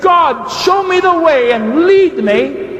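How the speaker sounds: high-pitched, slow, pleading shout.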